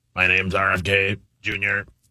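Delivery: slow, flat, level robotic machine-like voice. Told to go, performing a practiced impression: robotic RFK Jr. impression. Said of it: "You've been working on the impression".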